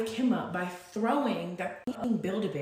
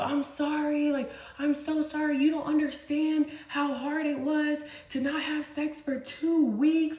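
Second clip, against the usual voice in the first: play-acted screaming, high and screamed out; 6 semitones higher than usual. Retelling what a man screamed through the window, imitating his screaming. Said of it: "He's screaming through the window".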